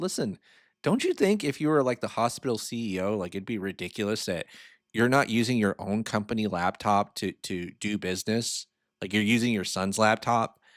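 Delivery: ordinary delivery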